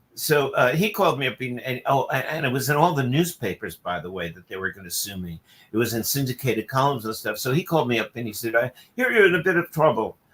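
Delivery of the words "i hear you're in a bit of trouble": put-on very proper English accent, pitched up. Retelling what a man said when he phoned, in a very proper English accent. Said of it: "but a very proper English accent".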